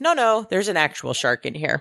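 ordinary talk

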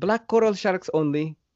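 put-on Filipino English accent. Quoting the guy on a snorkeling trip, in a Filipino accent. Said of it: "Filipino accent".

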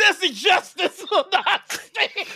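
very high, fired-up, amped-up delivery.

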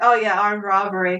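usual speaking voice

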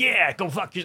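put-on swagger. Joking about telling off corporate pressure: mock bravado. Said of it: "I'm saying that with a bunch of bravado".

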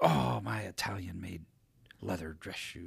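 put-on complaining voice. Retelling a client's gripes on a muddy walk: imitating someone complaining. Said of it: "he's bitching".

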